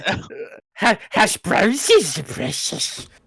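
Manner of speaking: stuttering, stammering character voice. Joking about the other speaker's slip "hash brownses": Gollum voice. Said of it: "I'm sorry, Gollum".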